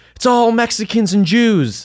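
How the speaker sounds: very high-pitched, crazed, unhinged screaming. Telling of a man on the speaker's block, imitating him screaming. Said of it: "he was screaming like".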